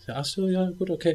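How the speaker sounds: uninterested brush-off. Quoting what she said in reply, mock-indifferent reply. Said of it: "Und die interessiert es halt gar nicht".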